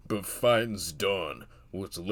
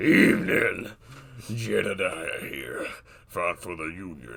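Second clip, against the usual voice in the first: put-on veteran voice, rough like gravel; 5 dB louder than usual. Reading a scripted scene as a Union veteran: Jedediah, voice rough like gravel. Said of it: "voice rough like gravel".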